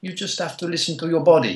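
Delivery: put-on English spoken with a French accent. Quoting a Frenchman's advice about listening to your body: French accent. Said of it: "He's a very cool Frenchman".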